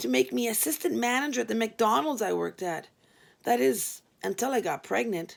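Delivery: ordinary delivery, nothing marked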